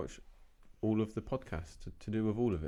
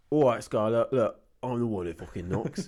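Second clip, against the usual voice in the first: put-on British accent, louder; 8 dB louder than usual. Doing a quote from a show in a british version: put-on british accent. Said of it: "British version would be".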